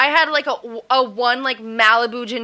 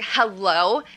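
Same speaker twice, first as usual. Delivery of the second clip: mock attitude in a lower voice; 3 semitones lower, 3 dB quieter than usual. Retelling how a friend opened the door to a girl's parents, imitating Gabby's attitude. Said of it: "she had, like, a fat attitude".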